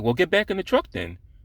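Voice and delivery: play-acted, very high, with a bit of attitude. Retelling what the man from the truck said to him, retelling a line with attitude. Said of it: "he said it with a little bit of an attitude".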